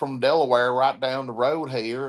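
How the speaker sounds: put-on Southern accent. Retelling what people from Delaware said, imitating a Southern accent. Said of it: "You got a full-on Southern accent".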